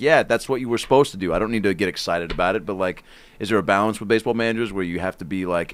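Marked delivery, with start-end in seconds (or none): none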